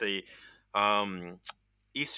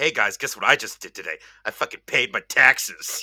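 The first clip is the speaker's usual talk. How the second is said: put-on excitement in a young person voice; 3 semitones lower, 8 dB louder than usual. Explaining a joke he made, imitating an excited young person. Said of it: "young people would get all excited and be like".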